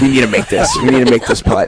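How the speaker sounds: completely serious delivery. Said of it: "gets all serious".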